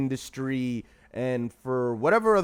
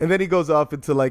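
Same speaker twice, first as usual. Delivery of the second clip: usual speaking voice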